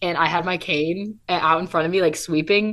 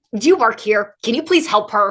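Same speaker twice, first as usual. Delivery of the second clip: put-on aggressive, forceful, pushy voice; 3 semitones higher, 4 dB louder than usual. Retelling how a lady asked someone else to help: imitating an aggressive request. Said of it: "so, like, aggressively".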